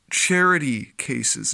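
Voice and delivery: dripping, pointed, heavy sarcastic emphasis. Using a term many may dislike, saying it with heavy sarcasm. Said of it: "Notice the heavy emphasis on sarcasm".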